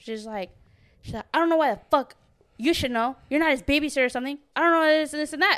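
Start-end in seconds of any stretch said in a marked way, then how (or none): 1.3-5.6 mock hostile, mad, aggressive, heated, in-your-face delivery. Retelling what a coworker snapped when asked about Johnny: imitating someone mad aggressive. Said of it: "All mad aggressive".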